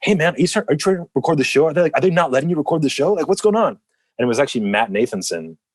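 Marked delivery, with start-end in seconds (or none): 0.0-3.8 put-on super excited, fast, pitched up, in-your-face. Retell a guy coming up right in your face about recording the show, imitating someone super excited. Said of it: "instantly like super excited and like right in my face".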